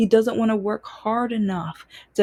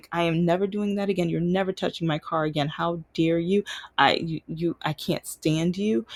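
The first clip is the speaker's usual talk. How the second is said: mock-upset, emotional outburst, lower; 4 semitones lower, 3 dB quieter than usual. Retelling arriving at his house after he touched the car, retelling an emotional outburst. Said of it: "I get to his house and I am emotional".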